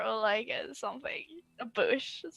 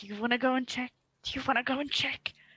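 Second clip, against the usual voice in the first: hushed whisper. Asking another player in character whether they want to check: whispering. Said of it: "I'm whispering".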